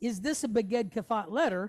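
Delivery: normal talking voice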